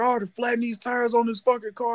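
mock all-out high, shrill screaming outburst. Retelling how she reacted at the meetup: imitating her screaming. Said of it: "she started screaming".

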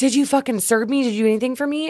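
mock high, screamed, in-your-face tirade. Retelling how a customer screamed in their face: imitating a customer screaming. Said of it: "he's screaming at me in my face".

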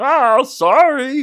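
belted out, high and puppety. Joking about guitar and comedy, answering in [name]'s silly Muppet voice. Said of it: "He's a Muppet. That explains the voice".

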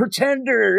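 put-on crowd yelling. Retelling a comic scene where kids answer Exodus: imitating a crowd yelling. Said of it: "They're all yelling".

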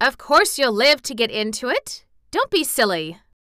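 sharp, snapped, indignant delivery. Mary answers the boy who clutched her hands, snapping indignantly. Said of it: "snapped Mary indignantly".

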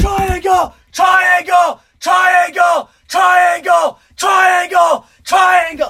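very high, very slow, drawn-out screaming. Retelling a fight, speaker acts out a trainer who kept yelling; imitating a trainer screaming. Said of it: "he didn't stop screaming triangle".

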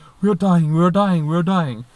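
put-on loud, frantic, freaked-out, panicked repeated cries. Retelling a lost night walk, imitating a panicking friend. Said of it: "panicking and freaking out".

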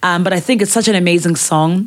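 ordinary talk, nothing marked

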